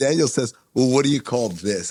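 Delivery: normal talking voice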